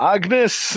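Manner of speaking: very heavy Scottish brogue. Saying a character's name the way they want to hear it: very deep scottish accent. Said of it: "in a very deep Scottish accent".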